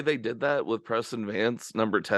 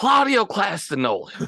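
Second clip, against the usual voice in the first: put-on old baseball announcer voice, higher and louder; 10 semitones higher, 5 dB louder than usual. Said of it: "Hey, Harry".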